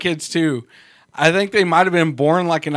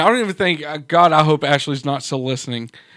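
plain

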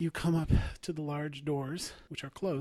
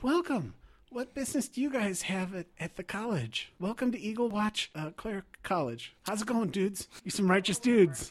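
put-on high young teen boy voice, laid-back; 9 semitones higher, 4 dB louder than usual. Game master voices a 13-year-old boy greeting the party at the college, 13-year-old boy voice. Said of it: "he says".

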